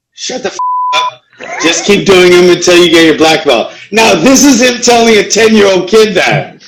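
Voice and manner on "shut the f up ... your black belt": animated, swooping karate-instructor voice, retorting. Retelling what the karate instructor told a complaining kid: imitating his karate instructor. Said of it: "I'm gonna quote him".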